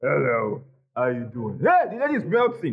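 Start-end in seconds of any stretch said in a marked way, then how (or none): 0.0-1.6 very low, deep, suave, charming big-man voice. Describing how gym-going men greet a woman, in a big brother voice. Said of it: "all this big brother voice".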